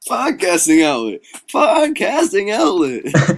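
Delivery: very loud, shrill, high ad-announcer call. Podcast hosts joking about recording, in a Podcasting Outlet commercial voice. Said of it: "you sound just like the guy from the commercial".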